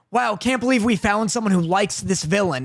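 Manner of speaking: normal talking voice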